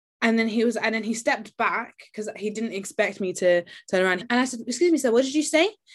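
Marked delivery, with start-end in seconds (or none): 4.7-5.7 mock courteous, calm, polite, pitched-up voice. Retelling turning back to ask a man what he said; retelling a polite question. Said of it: "I said it in a polite way".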